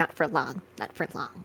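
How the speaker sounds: put-on muttering under breath. Retelling what a man said about the employee-of-the-month plaque, retelling a mutter under breath. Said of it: "under his breath".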